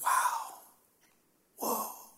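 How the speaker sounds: soft awed whisper, rising on "whoa". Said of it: "We whisper it to each other".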